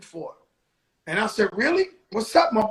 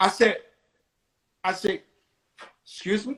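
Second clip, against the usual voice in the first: normal talking voice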